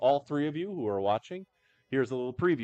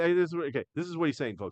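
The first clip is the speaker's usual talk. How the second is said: plain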